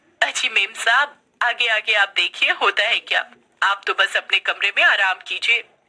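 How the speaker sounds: plain reading voice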